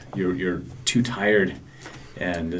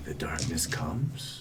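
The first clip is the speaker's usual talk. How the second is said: smooth, silky, deep, soft voice; 3 semitones lower, 8 dB quieter than usual. Narrator telling listeners what a creature that cocks its head says: silky, deep voice. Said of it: "you hear this uh, silky, deep voice say".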